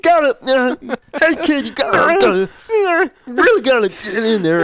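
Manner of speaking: bad impression, very high, loud, slowly dragged squeal. Imagining a movie character's line for the others: terrible Bobcat Goldthwait impression. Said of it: "that's my terrible Bobcat Goldthwait".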